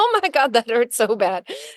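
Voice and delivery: words laced with laughter, laughing through pain. Retelling breaking a toe, imitating laughing while hurt. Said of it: "smiling and laughing".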